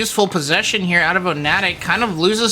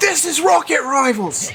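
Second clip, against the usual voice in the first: fake British accent, pitched up; 9 semitones higher than usual. Announcing the game's name during gameplay, in a put-on British accent. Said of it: "I've got to add the the British accent on".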